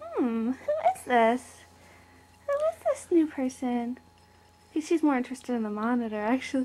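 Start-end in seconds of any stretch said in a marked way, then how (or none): 0.2-4.0 musing, curious cat voice with swooping pitch. Showing a cat meeting a new baby, voicing the cat's thoughts. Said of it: "And Kushka's like".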